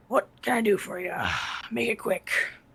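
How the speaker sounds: quiet grunt, muttered under the breath. A game narrator voices the shopkeeper greeting customers with a grunt. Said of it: "he greets you with a grunt".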